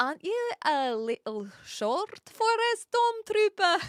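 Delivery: put-on Scottish accent. Speaker practicing famous quotes while trying out a Scottish accent. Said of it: "let's figure out this Scottish accent".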